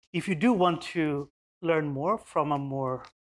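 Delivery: plain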